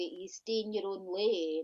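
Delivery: plain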